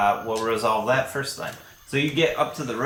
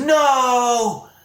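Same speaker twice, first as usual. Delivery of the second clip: full-lunged, very high, drawn-out shout; 12 semitones higher, 7 dB louder than usual. Game narrator voicing a character answering a goblin: shouting at top of lungs. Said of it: "he's shouting at the top of his lungs".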